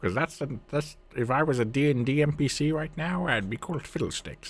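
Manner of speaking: goofy high demon voice. Describing a League scarecrow-demon character, speaking in a Fiddlesticks voice. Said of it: "and this would be my voice".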